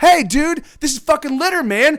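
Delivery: high-pitched screaming. Retelling how a homeless man yelled at a littering man: imitating a man screaming. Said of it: "he starts screaming at this guy".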